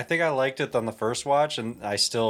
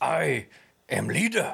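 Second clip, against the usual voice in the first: rough, grunting primitive caveman voice; 4 semitones higher than usual. Hosts discussing an episode, quoting its cave dwellers: Doctor Who caveman voice. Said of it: "That's actually pretty good".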